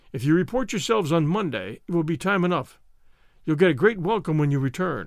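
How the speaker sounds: ordinary delivery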